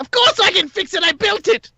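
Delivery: very high, frantic screaming shriek. Voicing a character in a tabletop game as the players doubt him, screaming. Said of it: "He screams".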